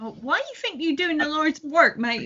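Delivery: soft, grandmotherly, botched put-on Cockney accent. In a game scene, the speaker questions another character in an attempted cockney accent. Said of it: "I'm trying an accent here".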